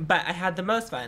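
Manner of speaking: plain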